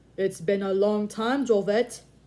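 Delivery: big, loud, booming voice. A man greets an old friend after a long absence, booming. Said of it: "Geddes boomed".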